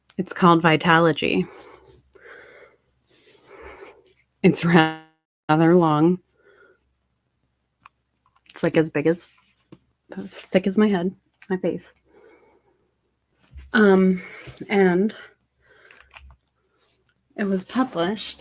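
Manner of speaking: slow, exhausted delivery. Speaker describing a book after reaching for it, talking really slow. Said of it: "I know I'm talking really slow".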